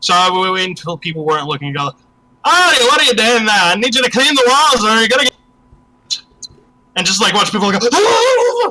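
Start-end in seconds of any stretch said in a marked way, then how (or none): 2.4-5.3 put-on Irish accent, pitched up. Imitating him behind people's backs as a running joke, imitating him in Irish accent. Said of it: "I can do an Irish accent pretty good".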